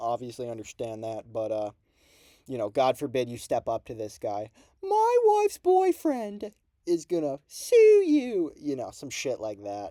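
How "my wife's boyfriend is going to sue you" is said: terrible whiny voice, very high, loud and slow. Mocking a guy you call a crybaby, do a terrible Ian Garry impression. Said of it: "holy terrible impression".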